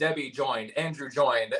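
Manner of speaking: robotic, automated system voice. Explaining what was heard in the earpiece as the show started: imitating automated voice. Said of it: "an automated voice in my ear saying".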